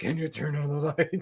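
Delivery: put-on deep actor voice. Imitating how Henry Cavill would talk at night: imitating Henry Cavill's voice. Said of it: "And he talks like this".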